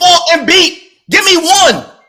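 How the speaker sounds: loud, high-pitched, heated shouting. Arguing with others about a fight, yelling. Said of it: "Why you yelling?".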